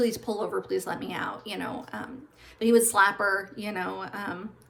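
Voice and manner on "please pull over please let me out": acted-out desperate pleading. Recounting a woman pleading with a man driving erratically, retelling her begging. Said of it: "she'd be begging".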